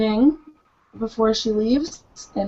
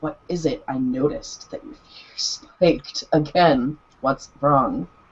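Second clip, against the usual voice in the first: very soft, hushed half-whisper under the breath; 7 semitones lower than usual. Narrator voicing a woman sitting next to a man; half-whispering. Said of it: "she is just going to whisper".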